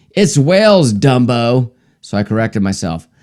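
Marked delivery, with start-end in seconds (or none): 0.2-1.7 nasty, contemptuous, snarling voice. Telling a joke, quoting a woman at a bar: imitating a snarl. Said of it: "One of them snarled at me".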